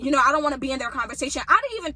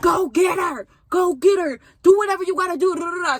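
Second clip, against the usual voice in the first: angry, heated yelling; 5 semitones higher, 6 dB louder than usual. Retelling getting in a boy's face in an argument: retelling own yelling. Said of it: "So I'm in his face yelling at him".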